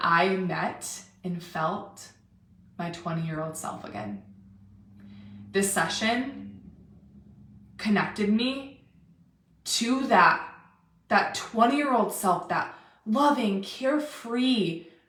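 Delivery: slow, moved, increasingly emotional delivery. Speaker recounting what a woman said after her first session, getting emotional. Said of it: "I'm gonna get emotional".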